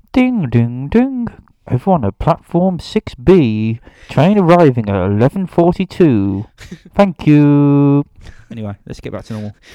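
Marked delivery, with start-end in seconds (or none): 0.1-8.0 put-on railway station tannoy announcer voice. Speaker riffs on sounding like a railway station tunnel announcement; railway station announcement voice. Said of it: "like doing a tunnel announcement at a railway station".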